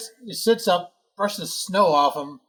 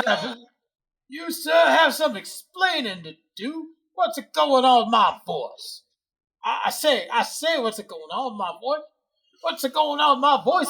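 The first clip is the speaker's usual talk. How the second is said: high, blustery cartoon rooster voice; 6 semitones higher than usual. During a shared story, one character demands an explanation, in Foghorn Leghorn voice. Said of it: "Foghorn Leghorn".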